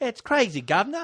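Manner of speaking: bad, half-hearted fake British accent. Joking along with the other speaker: bad put-on British accent. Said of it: "Walkabout ain't even British".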